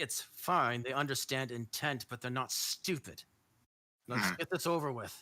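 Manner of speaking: slow, clenched-jaw words forced through gritted teeth. Voicing a shop owner who gives in: speaking through gritted teeth. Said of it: "He's speaking through gritted teeth".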